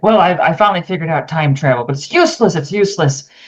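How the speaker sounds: ordinary talk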